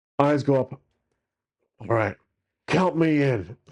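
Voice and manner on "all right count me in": voice like a fantasy dwarf. Player voicing his character Legolas accepting the general's offer, Legolas voice sounding like dwarf. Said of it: "sounds like a dwarf".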